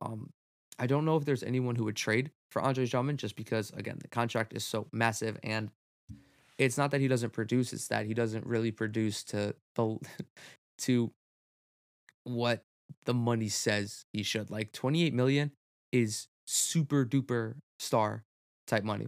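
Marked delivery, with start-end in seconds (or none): 14.5-19.1 slow, stretched-out "super duper star". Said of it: "Maybe not super duper star".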